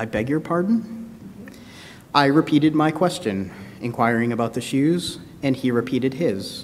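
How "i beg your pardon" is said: slow, soft, drawn-out Midwestern drawl. Retelling how the youth behind the store counter replied, slow midwestern drawl. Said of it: "replied in a slow Midwestern drawl".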